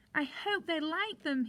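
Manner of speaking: squeaky little mouse voice, tiny squeaking. Narrator reading a Santa story, Mouse's line, squeaky Mouse voice. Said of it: "he squeaked".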